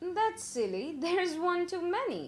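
speaking through a laugh. After counting the people by match light and getting thirteen: laughing. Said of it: "and then laughed".

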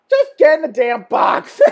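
loud, laughing, scolding shout. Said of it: "Mama's gonna be like".

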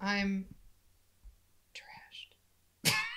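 soft whisper under the breath. Saying aloud that they are trashed: whispering. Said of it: "I like how you just, like, whispered it".

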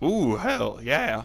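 cracking voice. A teen telling about getting a chef job next year, voice cracking. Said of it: "my voice cracked".

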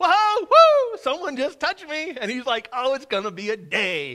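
acted giddy outburst, very high and very loud. Speaker retelling Jesus's reaction when someone touched him, mock-giddy Jesus. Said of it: "almost giddy when he saw faith".

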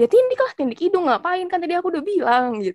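acted heated snap-back. Recounting an argument, acting out her own reply to the other person: retelling a heated snap-back. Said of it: "Terus aku balik ngegas gitu kan".

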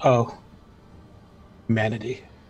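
dry, flat, expressionless delivery. Describing a character passing a fiery mess, who reacts to it: deadpan. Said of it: "he's just going to deadpan".

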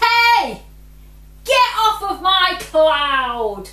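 very loud, high, annoyed yell, "cloud" stretched. Narrating a story as a voice yells at visitors landing on its cloud, irritated shout. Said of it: "an irritated voice shouted".

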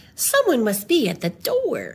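ordinary delivery

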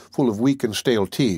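ordinary delivery

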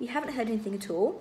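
plain

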